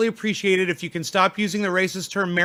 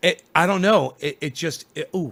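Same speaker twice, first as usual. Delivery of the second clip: plain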